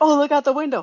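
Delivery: put-on Canadian accent. Quoting one of two arguing show characters: imitating a canadian accent. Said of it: "pull the Canadian accent".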